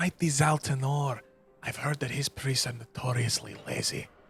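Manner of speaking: soft, hushed half-whisper. In character, half-whispering a guess to the group. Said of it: "he whispers".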